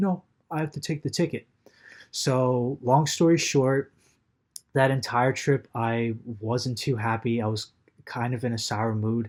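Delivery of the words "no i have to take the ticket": smug, self-satisfied train conductor voice. Retelling the ticket taker's reply about taking the ticket: imitating a smug conductor. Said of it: "So smug, too".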